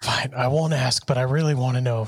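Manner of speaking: whispered aside. In a tabletop game, a player's character whispers an aside to another character. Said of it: "I whisper that off to Damien".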